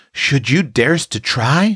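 awe-stricken, wondering tone. A child reacts to an older girl taking on a new task; awe-stricken tone. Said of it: "in an awe-stricken tone".

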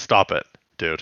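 put-on disappointed-parent growl. Retelling a cartoon scene, voicing Tigatron growling like a disappointed parent. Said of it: "kind of like a disappointed parent".

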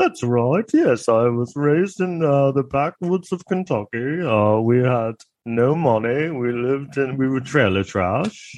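fake British accent. Mocking a Kentucky-raised man who suddenly sounds British, in a fake British accent. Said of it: "when did you become British?".

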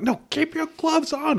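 mock shrill scream, very high pitch. Retelling climbing a construction fence toward a man removing his gloves: retelling a scream. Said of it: "And I'm screaming".

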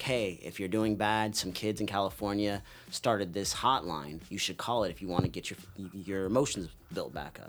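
ordinary delivery

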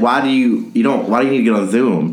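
plain

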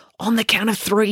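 plain reading voice

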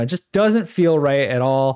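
ordinary delivery

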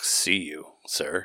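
dead-serious, grave delivery. Imitating another speaker's serious sign-off, mock serious "see you". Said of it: "It's like".

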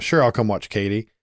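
ordinary talk, nothing marked

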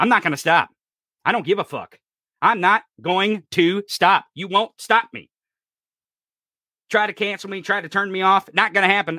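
ranting loudly at a high pitch. A speaker addressing listeners directly, yelling and screaming. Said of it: "especially with me yelling and screaming".

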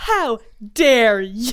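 put-on loud, slow, defensive, indignant teenage outrage.

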